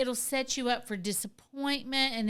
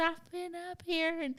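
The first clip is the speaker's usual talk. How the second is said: high, wheezing, labored speech, pitched up; 6 semitones higher than usual. Retelling the scene where Woody finds the penguin, Wheezy's wheezing voice. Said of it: "he's wheezing as he's talking".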